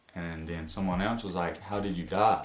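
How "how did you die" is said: ordinary talk, nothing marked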